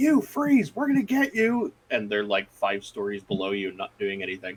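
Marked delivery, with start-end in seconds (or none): 0.0-1.7 high-pitched cop yelling, voices way up. Speaker recalls being on a parkade with cops below, imitating cops yelling. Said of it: "you hear all the cops yelling".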